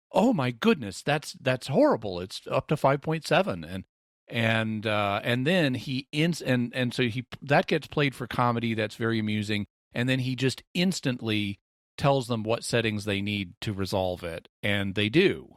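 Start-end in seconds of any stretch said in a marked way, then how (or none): 0.1-3.6 worried, alarmed, repeating voice. Acting out a doctor repeating readings to people: mock-alarmed tone. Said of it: "repeating what people are saying in an alarmed tone of voice".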